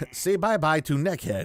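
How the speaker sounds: high-pitched taunting goblin voice, pidgin-like speech. Reading an adventure aloud, voicing a goblin: Jar Jar Binks voice. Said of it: "they talk like Jar Jar Binks".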